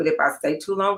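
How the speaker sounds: usual speaking voice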